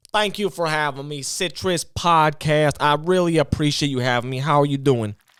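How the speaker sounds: very high, loud put-on voice. Thanking the podcast for having them: Katt Williams voice. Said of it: "we got Cat Williams".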